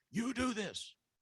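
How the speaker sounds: very high, meltdown-level screaming. Retelling how a child screamed at the speaker over a drink: imitating someone screaming. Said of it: "screaming at me".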